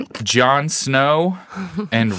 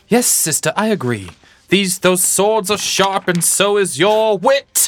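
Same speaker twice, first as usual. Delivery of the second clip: high-pitched put-on British accent; 6 semitones higher than usual. Acting a brother character in a sketch scene: british accent. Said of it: "How did I just now figure out a British accent?".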